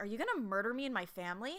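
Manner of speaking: put-on dry, matter-of-fact, deadpan, no-fuss delivery. Retelling a show scene where a man questions a bird: imitating a deadpan question. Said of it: "just deadpan, like, asking this bird".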